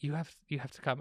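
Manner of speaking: frantic, rushed, hushed whisper. Retelling calling Bobby on the phone, retelling a whisper. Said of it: "I'm like whispering on the phone".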